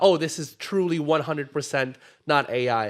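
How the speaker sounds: ordinary delivery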